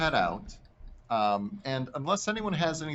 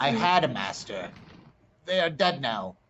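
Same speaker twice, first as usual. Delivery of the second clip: crow-like character voice; 4 dB louder than usual. A character telling someone about their master, in a crow voice. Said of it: "let me try to get into a more crow voice".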